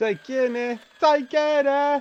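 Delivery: loud voice. Repeating a game character's goodbye line: very loud. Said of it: "that was very loud".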